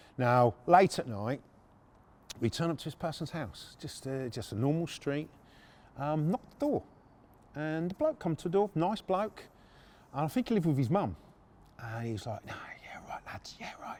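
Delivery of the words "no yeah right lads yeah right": quiet whispering. Retelling how a man at the door answered: imitating someone whispering. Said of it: "Why are we whispering?".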